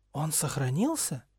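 surprised, astonished, asking tone. Reading a dark lord questioning a young wizard: surprised question. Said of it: "с удивлением спросил Волдеморт".

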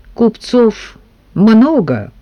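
evasive, noncommittal, giving nothing away. A servant, asked if he has heard of a certain merchant, gives an evasive reply. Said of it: "уклончиво ответил слуга".

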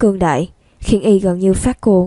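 plain reading voice

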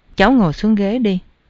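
ordinary talk

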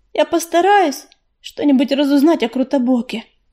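ordinary delivery

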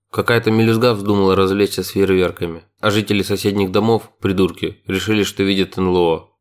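ordinary delivery

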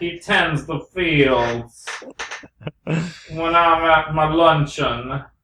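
put-on southern accent character voice. Joining a voice bit, answering the first voice: Southern Alan Rickman voice. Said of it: "Is that Southern, uh, Alan Rickman?".

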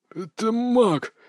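frightened, stuttering, halting blurt. Reading a story, one of the leather-clad men blurts out to the others: stammering. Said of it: "заикаясь".

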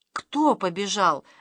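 horrified, terrified, hushed whisper. Andryusha, after the door slams shut, asks his grandfather, whispered in horror. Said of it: "в ужасе прошептал Андрюша".

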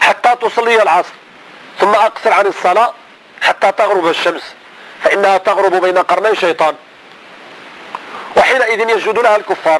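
ordinary delivery

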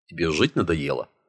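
ordinary delivery

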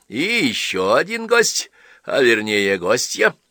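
loud, boastful, showing-off delivery. The priest's wife keeps telling Chkamasov about their guests; boastful. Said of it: "хвастливо продолжала попадья".

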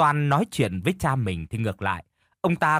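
ordinary delivery, nothing marked

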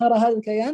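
ordinary delivery

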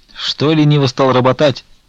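faintly smirking voice. A pilgrim questions the abbot about his slackening work, with a slight smirk. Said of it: "слегка усмехнувшись".

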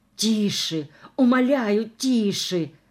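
moaned words. Narrator voices a short-legged woman following an actress, moaning. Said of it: "простонала коротконожка".

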